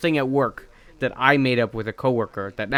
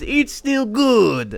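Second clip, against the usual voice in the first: very high-pitched, loud, put-on Italian accent; 11 semitones higher, 5 dB louder than usual. Quoting the man in the planned pizza commercial, Italian accent. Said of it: "we say it in an Italian accent".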